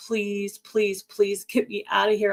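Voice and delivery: desperate, repeated, begging plea. Retelling a call asking a younger sister for rescue: retelling begging. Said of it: "I was begging her".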